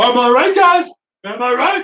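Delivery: exaggerated put-on voice, very high, shrill, loud, overdone. Speaker describes a habit of doing an exaggerated John Cena voice. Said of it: "the Cena voice thing, the over exaggerated".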